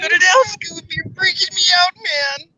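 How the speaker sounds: high, spaced-out character voice.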